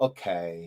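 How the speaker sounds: toned-down, milder tone with the sass taken off. Imitating a child saying okay with some of the sass removed: imitating a less sassy okay. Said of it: "take some of the sass off".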